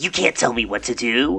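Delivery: raspy, gritty, plucky anime character voice. Voicing a character as a plucky anime type: raspy plucky anime character voice. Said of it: "I'm a plucky anime character".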